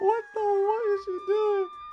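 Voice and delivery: very high, loud, shocked shriek.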